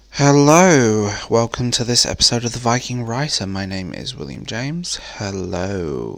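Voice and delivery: jokey, mock sexy, sultry phone voice. Host opening an episode of the show, in a mock sexy phone voice. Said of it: "I am doing this in my sexy phone voice".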